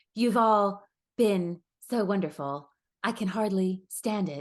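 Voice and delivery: slow, drawn-out delivery like reading poetry lines. Mocking Pamela's Instagram captions by reading one out: Pamela voice impression. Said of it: "you did her, uh, voice pretty good there too".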